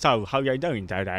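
soft Cockney accent with tongue barely used. Explaining how Cockney speakers talk, demonstrating a Cockney accent impression. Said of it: "They talk like this".

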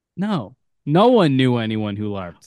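said with open, audible distaste, disgusted. Asked whether anyone they knew LARPed, the speaker answers, disgusted. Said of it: "Why'd you say it like in such a disgusted way?".

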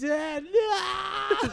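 put-on very high sobbing wail, long drawn-out no. Retelling a dad yelling at his eight-year-old, imitating the kid crying, screaming. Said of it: "crying, like, screaming".

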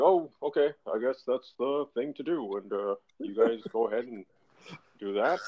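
low, offhand, shrugging tone. Retelling how Barack Obama answered his economic advisers: Barack Obama impression. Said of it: "I gotta work on my Barack impression".

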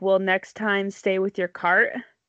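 ordinary talk, nothing marked

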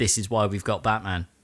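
very low, weary, sighed mutter. Retelling a story, the speaker quotes one of them sighing, imitating a sigh. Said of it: "kind of sighs and goes".

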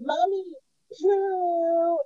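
loud, high put-on toddler shout, "poo" drawn out. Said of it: "Why are you so loud?".

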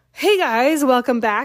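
out of breath, winded. Greeting viewers right after running outside, out of breath. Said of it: "so I'm like out of breath".

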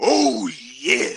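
belted out high and loud. Signing off the episode with an impression: Macho Man voice. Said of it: "I'll leave you with some Macho Man".

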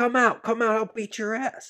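high, angry shout, acted. Retelling how an ex-girlfriend yelled at the house: imitating someone yelling. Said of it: "she was yelling at the house".

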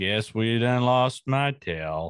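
gloomy, mopey tone. Joking about Eeyore being a sad John Wayne: Eeyore as sad John Wayne. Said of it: "Eeyore was basically a sad John Wayne".

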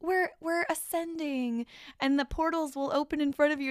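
airy, light, loving delivery, pitched high. Retelling how a lady delivers her message: imitating a light, loving tone. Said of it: "she says it like it's this really, like, light and love situation".

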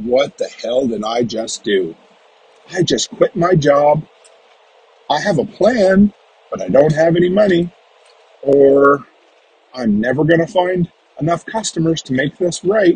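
plain

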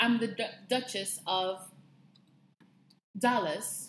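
put-on British accent. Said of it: "I've never said my name in British accent".

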